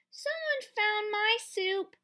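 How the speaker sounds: small, high, squeaky little voice. Narrator reading a story aloud, voicing Baby Bear's line, Baby Bear's high squeaky voice. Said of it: "in her high, squeaky voice".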